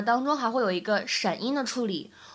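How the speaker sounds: ordinary delivery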